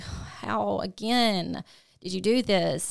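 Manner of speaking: put-on sobbing. A mother recounts a phone call with her son, retelling bawling on the phone. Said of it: "i'm bawling".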